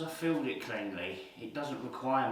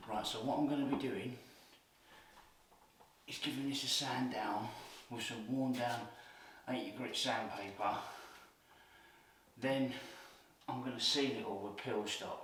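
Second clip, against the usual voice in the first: hushed half-whispered voice; 2 semitones lower than usual. Working early while clients sleep upstairs, explaining the next step, half-whispering. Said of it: "if you're wondering why I'm whispering".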